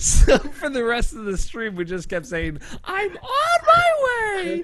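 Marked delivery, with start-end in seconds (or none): 2.8-4.6 put-on very high, slow, tiny little-kid voice. Recalling a running joke from a stream chat message, in a little kid's voice. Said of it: "in like this little kid's voice".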